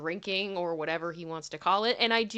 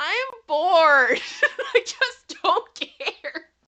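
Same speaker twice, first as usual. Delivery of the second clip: very high, loud, drawn-out whine; 11 semitones higher, 9 dB louder than usual. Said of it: "I can just see it in my head of him being like".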